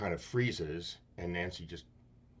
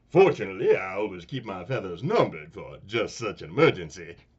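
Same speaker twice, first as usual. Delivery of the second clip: booming, belted cartoon rooster voice with wildly swinging pitch; 13 dB louder than usual. Running through a series of cartoon impressions, doing a Foghorn Leghorn voice. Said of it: "Foghorn Leghorn".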